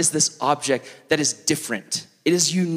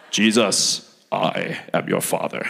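half-hearted, very low, very slow rumbling voice; 8 semitones lower than usual. Joking a parody line after a Bible verse: Darth Vader voice. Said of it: "either Mufasa or Darth Vader".

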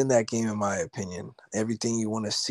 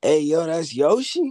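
put-on casual New York accent, raised and pitched-up; 7 semitones higher, 6 dB louder than usual. Retelling what the man next to him said, in a new york accent. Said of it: "kind of had this like New York like accent".

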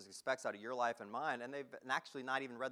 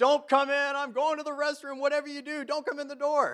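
piercing high scream at full volume; 14 semitones higher, 13 dB louder than usual. Retelling being in a restroom with the door unlocked, retelling a scream. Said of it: "I start screaming".

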